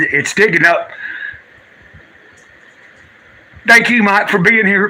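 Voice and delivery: speaking through happy tears. Thanking a viewer for being there, crying happy tears. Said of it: "I'm not crying out of, uh, sorrow".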